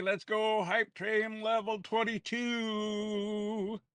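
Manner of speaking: big voice, very slow and drawn out. Cheering the hype train reaching level twenty-two: big voice. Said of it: "I'm trying to use my big voice".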